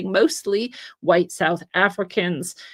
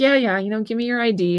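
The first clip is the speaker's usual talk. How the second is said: mock good-humored, amused cop voice; 2 semitones higher than usual. Retelling a story, quoting the cop asking the kid for id, retelling a good-humored cop. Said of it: "He's like good humored".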